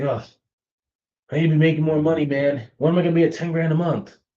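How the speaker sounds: play-acted, fed-up, frustrated venting said aloud. Recounting a student from his program on a call, imitating him frustrated. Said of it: "He was very frustrated".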